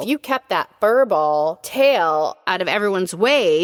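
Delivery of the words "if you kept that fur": plain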